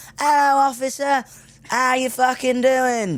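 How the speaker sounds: very high, over-the-top put-on English accent. Retelling how you got out and greeted an officer, hoping to get away, in a put-on really English accent. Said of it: "I'm trying to be really English about it".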